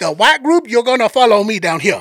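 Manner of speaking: put-on local New Orleans accent. Retell what a man told you when he came for the group, imitating a man's accent. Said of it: "he got the accent down".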